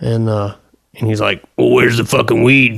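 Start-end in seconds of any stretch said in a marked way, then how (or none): 1.6-2.8 put-on crazy-sounding voice, faster. Retelling how a guy he handed a bong demanded weed, imitating his crazy voice. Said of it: "he got a real, real crazy voice".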